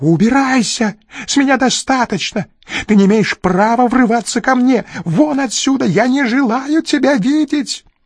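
very high, desperate, despairing screaming. Narrator reads a man ordering his visitor out, screaming in despair. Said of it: "в припадке отчаяния стал орать".

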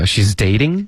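rising question-like tune on dating. Retelling how she said it as a question: question rise on dating. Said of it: "而且她还说的是一个疑问句的一个语调".

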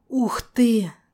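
strained hiss through gritted teeth. Narrator, swamped by magical energy after a month in a basement: hissed through clenched teeth. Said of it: "прошипел я сквозь стиснутые зубы".

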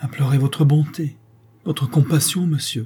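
quavering, unsteady voice. The freed convict answers the threatening banker in a trembling voice. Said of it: "répond d'une voix tremblante".

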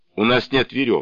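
ordinary delivery

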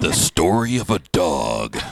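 dramatic trailer read. Showing he can make anything sound dramatic, in an action-thriller trailer voice. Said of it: "you can make anything sound like".

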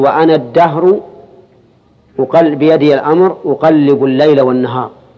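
ordinary delivery

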